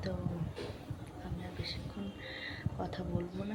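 speaking softly. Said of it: "আস্তে আস্তে বলছি".

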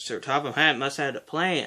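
plain

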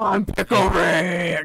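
gruff put-on superhero voice. Joking with friends while playing, quoting a cartoon: Batman-like voice. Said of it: "Why I sound like Batman".

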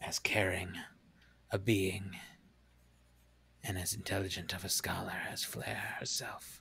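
resonant, echoing voice of a boulder creature. Game master voices one of two stone creatures speaking to the players: echoing stone creature voice. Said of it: "You now see as they uncurl themselves from this almost boulder-like form, these two creatures, probably about 6 feet tall each, large, broad shoulders, standing there, stand atop this pile of boulders in front of you. ... And a kind of echoing, booming voice kind of chimes out".

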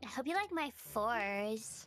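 odd put-on Beverly Hills rich-girl accent. Talking in a voice the others remark on, odd put-on Beverly Hills voice. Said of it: "Why is she talking like that?".

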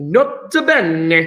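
put-on Italian accent with bene drawn out long. Chemistry explanation, adding a nota bene, said in italian accent. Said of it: "Got to say it with an Italian accent".

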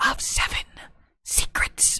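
hoarse, raspy, rasping breath of a whisper. Narrating a mysterious voice that speaks to the champion, in a hoarse whisper. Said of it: "and then a hoarse whisper".

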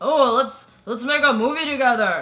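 put-on, bro-y dude-bro voice. Talking about bro-y films, the speaker shows their bro-y voice. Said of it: "What's your bro-y voice?".

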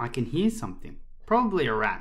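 plain

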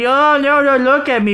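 play-acted, high screaming cry of dismay. Describing a pretty lady who rejects compliments, imitating a woman screaming. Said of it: "she's screaming".

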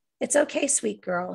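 cooed, cooing tone. He speaks to a girl, who then sobs into her pillow; cooing. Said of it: "he cooed".

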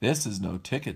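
ordinary delivery

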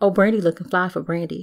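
usual speaking voice

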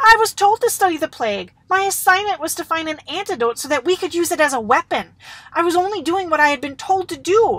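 loud, high-pitched crying out. Naviv, accused before the council, cries out in his defense. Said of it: "Naviv cried out".

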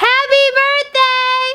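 shrill, very high, loud shout. Doing a dare to yell happy birthday outside: yelling happy birthday. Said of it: "I yelled it".

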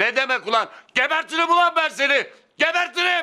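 high, loud, furious, angry shouting. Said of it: "Baba, neden bağırıyorsun?".

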